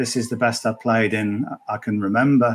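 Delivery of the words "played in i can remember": ordinary talk, nothing marked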